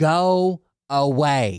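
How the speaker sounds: acted-out screaming. Retelling jumping and waving to get someone's attention, imitating a scream. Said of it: "And I start screaming".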